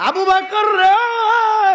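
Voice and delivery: high, loud weeping wail.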